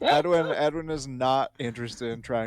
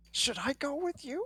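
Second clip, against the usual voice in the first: whisper, much higher and quieter; 12 semitones higher, 10 dB quieter than usual. A player voicing their character, asking a companion a question, whispering. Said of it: "Edwin will whisper".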